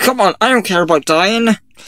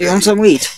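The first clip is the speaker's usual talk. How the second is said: ordinary talk, nothing marked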